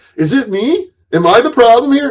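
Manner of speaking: very high, dripping with sarcasm. Retelling own past words: imitating own sarcastic question. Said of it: "I've sarcastically said".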